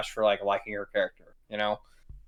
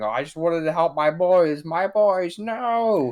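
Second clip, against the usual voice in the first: put-on scream, higher, louder, slower; 8 semitones higher, 5 dB louder than usual. Imagining a darker movie ending, doing a Wanda screaming impression. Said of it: "getting her soul dragged down to hell and was screaming".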